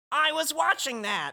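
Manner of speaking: very high-pitched cartoon dinosaur voice. Reading a Toy Story scene aloud, speaker voices the dinosaur: Rex the dinosaur voice. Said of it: "says Rex, the dinosaur".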